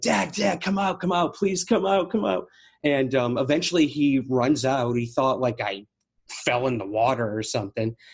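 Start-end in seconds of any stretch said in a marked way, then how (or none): 0.0-2.5 urgent, repeated, high, pleading yell. Retelling calling for dad to come out of the motel: imitating own past yelling. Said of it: "I'm yelling, like".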